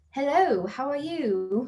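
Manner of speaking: prim, stiff, put-on British accent. Contrasting a casual greeting with a stiffly proper one: British accent. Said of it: "That was a great British accent".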